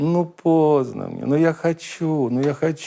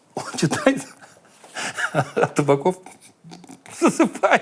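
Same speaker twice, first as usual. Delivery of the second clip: talking through laughter; 3 semitones higher than usual. Speaker tells a story about Tabakov falling asleep at a reading, laughing while telling. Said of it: "(смеясь)".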